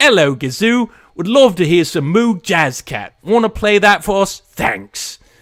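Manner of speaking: put-on Cockney accent. Reading a listener's request on air, the host does a cockney accent. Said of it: "I don't know why you've got a Cockney accent, but that's what you're getting".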